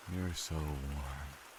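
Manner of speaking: drowsy, barely awake, half asleep, drifting off. Dan, drifting off, speaks to Rosalind: half asleep. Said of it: "(HALF ASLEEP)".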